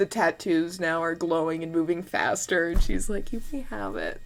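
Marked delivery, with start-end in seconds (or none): 3.3-4.2 unruffled, grave, serious, calm and composed. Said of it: "her face is serious and calm".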